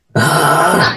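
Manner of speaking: ugh grunted deep, low and gravelly. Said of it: "deep, grovelly ... [name] voice".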